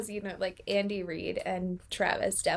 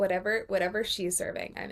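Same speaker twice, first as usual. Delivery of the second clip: plain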